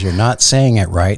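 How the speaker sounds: ordinary delivery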